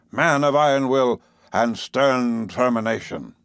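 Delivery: plain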